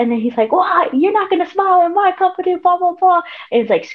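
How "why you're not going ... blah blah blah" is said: put-on, shrill, very high-pitched screamed rant. Retelling how he screamed at someone in formation: imitating someone screaming. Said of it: "screaming at him".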